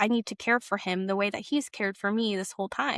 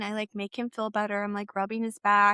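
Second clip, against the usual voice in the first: plain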